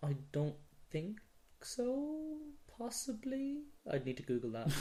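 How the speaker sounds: very high, swooping, unsure voice. Unsure whether a game studio made another game, voice going really high. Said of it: "Your voice went really high".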